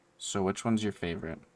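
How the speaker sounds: soft, hushed half-whisper. Voicing a character who leans in to a player: half-whispering in character. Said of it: "she's gonna whisper to you and be like".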